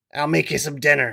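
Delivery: rough, gruff, gravelly smoker's voice. Retelling what a friend's mom said: gruff, gravelly voice. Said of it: "She's a very gruff, gravelly voice".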